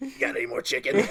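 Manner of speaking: put-on kid smoker's voice. Imitating a kid asking for more chicken: imitating a kid with a smoker's voice. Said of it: "Why does your kid sound like he smokes two packs a day?".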